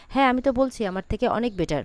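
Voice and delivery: normal talking voice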